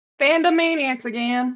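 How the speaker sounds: light, slight Southern twang. Being introduced on the podcast, she gives her name with a little Southern twang. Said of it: "you had a little twang to your voice like you're".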